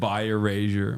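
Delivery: normal talking voice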